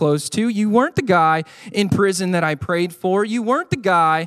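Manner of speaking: ordinary delivery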